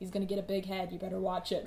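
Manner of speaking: ordinary talk, nothing marked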